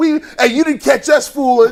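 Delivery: put-on young men screaming. Retelling how another group of young men taunt: imitating young men screaming. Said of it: "young men just screaming".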